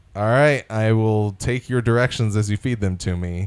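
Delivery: ordinary delivery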